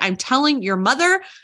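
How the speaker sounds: screaming. Retelling catching teens saying something cruel: retelling own screaming. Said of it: "I started screaming at both of them".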